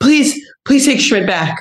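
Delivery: breathless, rushed, high-pitched pleading. Retelling fans crowding into an elevator to beg: imitating an out-of-breath fan. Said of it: "out of breath and be like".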